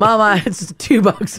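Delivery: ordinary delivery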